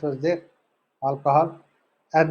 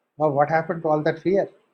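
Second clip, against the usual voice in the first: ordinary delivery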